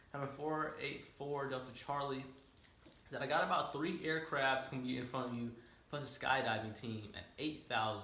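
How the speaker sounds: ordinary talk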